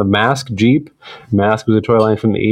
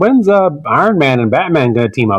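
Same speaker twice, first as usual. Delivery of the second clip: teasing, taunting caricature voice; 4 semitones higher than usual. Mocking the other speaker's comic mix-up, imitating a friend. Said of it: "That's what you sound like".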